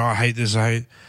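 ordinary talk

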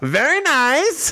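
very high-pitched comic character voice. Retelling a friend quoting Borat: Borat impression. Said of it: "It's Borat".

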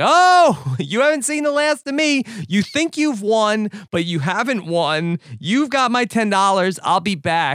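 play-acted, full-throated, high-pitched ranting scream. Retelling George screaming at a woman while being pulled away: imitating George screaming. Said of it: "screaming at the woman".

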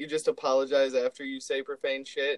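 ordinary talk

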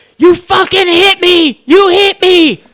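very slow, very loud, very high, shrill shriek. Retelling a fight, the speaker acts out the woman who was hit, imitating someone screaming. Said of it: "She's screaming".

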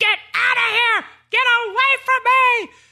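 very high-pitched, shrill screaming yell. Retelling a scene where a woman calls in panic: imitating someone screaming. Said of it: "she's screaming. She's like".

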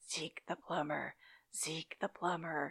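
eerie, creepy, hushed half-whisper, very close. Retelling how Budnick half-whispers into a sleeping Telly's ear: Budnick's creepy half-whisper. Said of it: "just whispers, really creepy-like into her ear".

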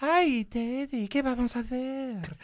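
very high, cartoon-style romancer voice, pitched way up. Showing how the long-running shtick with Scott sounds in his head, Pepe Le Pew voice. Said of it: "Pepe Le Pew".

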